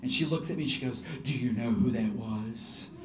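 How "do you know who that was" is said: put-on low, slow voice with a Slavic accent. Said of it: "Adina spoke with a really low voice".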